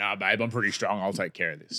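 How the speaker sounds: playful, low, soft put-on tough-guy voice. Retelling how the speaker answered an offer of help, in a fun tough-guy voice. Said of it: "I kind of said in a fun, tough guy voice".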